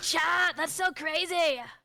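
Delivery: slow, drawn-out cartoon anime character voice. Showing the other speaker how she talks to chat: Bakugo voice. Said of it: "I always talk in a Bakugo voice".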